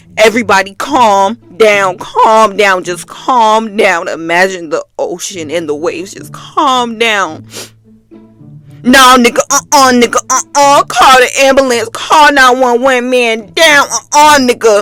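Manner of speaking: normal talking voice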